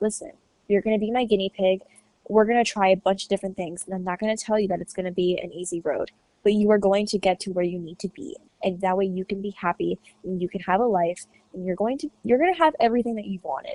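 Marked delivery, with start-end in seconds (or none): none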